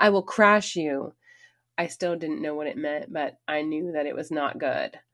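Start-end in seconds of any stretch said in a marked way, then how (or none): 0.0-1.1 enraged, furious, raised yelling shout. Retelling how he waved a finger in her face: imitating someone shouting. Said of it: "shouted that same line".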